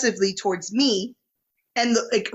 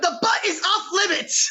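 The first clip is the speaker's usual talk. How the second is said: put-on screaming, higher pitched; 8 semitones higher than usual. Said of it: "I just started screaming".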